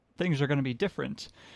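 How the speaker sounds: normal talking voice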